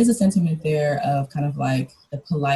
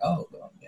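hushed, play-acted ironic and sarcastic delivery; 3 semitones higher, 9 dB quieter than usual. Showing how one reads the author's asides: imitating own sarcastic reading. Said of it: "I'm reading it and I'm a little bit sarcastic".

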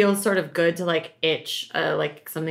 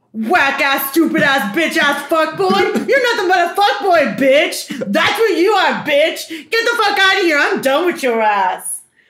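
high, loud, furious put-on ranting voice. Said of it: "I gotta really channel Nor".

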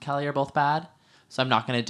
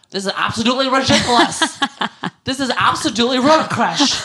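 put-on high, loud, shrill, slurred, furious screaming; 11 semitones higher, 9 dB louder than usual. Retelling how Kelly Dodd responded to the allegations: imitating Kelly Dodd screaming, slurring. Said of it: "screaming, slurring her words".

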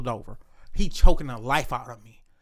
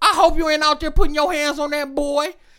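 put-on angry scolding voice, very high pitched; 10 semitones higher, 4 dB louder than usual. Retelling how grandma scolded the dad for hurting the boy: imitating grandma scolding angrily. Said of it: "She mad, she said".

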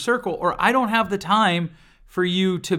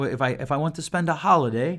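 terrible fake British accent attempt; 3 semitones lower than usual. Speaker trying to say it as British friends would, in a terrible British accent. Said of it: "terrible accent".

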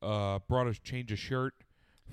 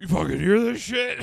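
put-on sleepy, angry rasp, very high, loud, creaky; 9 semitones higher, 7 dB louder than usual. Retelling being woken by a buzzer: imitating sleepy, pissed Mike. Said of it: "Mike was sleepy pissed".

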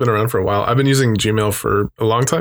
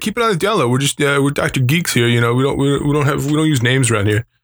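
higher-pitched put-on New Jersey accent; 4 semitones higher than usual. Quoting the owner, who was from Jersey, in a New Jersey accent. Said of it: "he talked like this, and he was from Jersey".

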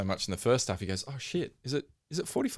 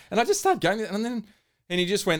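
plain

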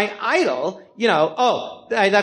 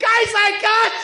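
shrill, very high-pitched, shrieking scream. Telling a story about calling Dana Carvey, retelling Dana Carvey screaming. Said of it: "Dana starts screaming".

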